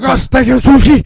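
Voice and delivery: very high, very loud, shrill yell. Doing the Japanese steakhouse bit for the others: loud shout. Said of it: "Whoa, that was loud".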